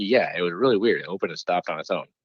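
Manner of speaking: usual speaking voice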